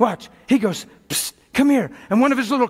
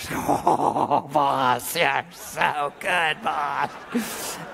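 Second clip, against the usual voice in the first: very low, soft, hushed devilish voice; 7 semitones lower, 5 dB quieter than usual. Playing the devil, speaking to his boss, in devil voice. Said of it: "It almost seems hilarious playing the devil".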